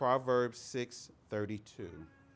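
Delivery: slow, deliberate delivery. Teaching about recognizing fools, speaker reads out a Bible citation, said slowly. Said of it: "I'm going to say the citations slowly".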